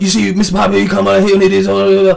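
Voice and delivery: loud, rough, level wrestling promo voice, creaky edge. Doing a second impression, addressing Mister Piper: Mr. T impression. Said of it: "what's that impression number two?".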